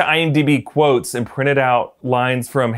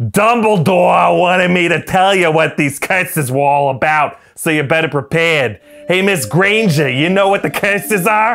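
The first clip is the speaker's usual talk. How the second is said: put-on Boston cop accent, pitched up; 5 semitones higher than usual. Retelling a man reading lines from a script to the speaker, in a Boston cop accent. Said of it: "Just his Boston cop accent".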